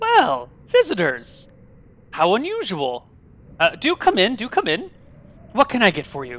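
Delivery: bright, cheerful, sing-song voice. Game narrator voices a woman standing behind the bar, in a cheerful voice. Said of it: "says in a bit of a cheerful voice".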